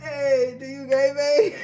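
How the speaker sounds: playful, loud, drawn-out shouted call. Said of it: "I'm yelling out gang gang".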